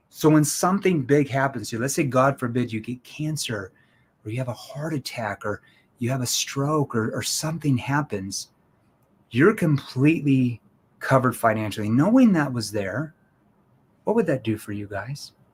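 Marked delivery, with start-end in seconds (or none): 11.9-15.3 soft, lowered, concerned tone, lower pitch. Showing how to ask a client a question: soft, concerned tone. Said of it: "I lower my tone into that soft, concerned tone".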